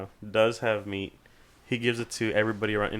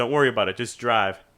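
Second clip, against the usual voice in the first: loud, twangy southern American voice; 5 dB louder than usual. Retelling what an old vet said when asked about a tarp: imitating Gary's southern twang. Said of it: "that southern twang".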